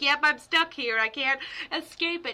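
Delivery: mock talking through little giggles, laughing. Retelling what an old lady in a wheelchair said, imitating giggling speech. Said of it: "just kind of like giggling".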